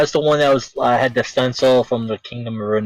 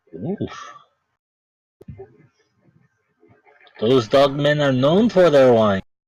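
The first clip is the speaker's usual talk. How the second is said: put-on thick Central European accent. Voicing the bartender answering a customer's question, thick Slavic accent. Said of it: "in a thick accent, almost uh, Central European accent, uh, Slavic".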